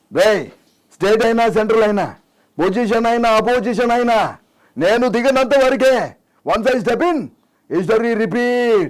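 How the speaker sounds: high, loud, roaring voice. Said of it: "Balakrishna".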